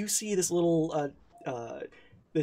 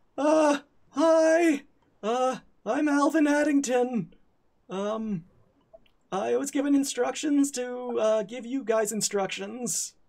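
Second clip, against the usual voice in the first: put-on high boy voice breaking, cracking upward; 8 semitones higher than usual. Game master voicing a little boy introducing himself to the party, Alvin Addington's cracking boy voice. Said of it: "in a voice that is breaking".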